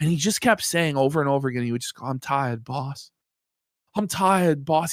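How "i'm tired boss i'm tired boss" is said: slow, play-acted worn-out, beaten-down, defeated voice. Retelling how Jer kept repeating a line: imitating Jer, tired and defeated. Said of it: "just completely depressed and defeated and tired".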